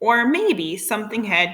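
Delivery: plain reading voice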